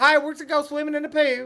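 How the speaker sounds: very high, loud, shrill, booming youth pastor voice. Joking about a swimming trip, imitating a youth pastor voice. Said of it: "that's the voice of that youth pastor".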